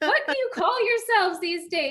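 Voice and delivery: put-on yelling. Retelling complaining to club staff about the table: imitating own yelling. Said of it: "And just yelling at them".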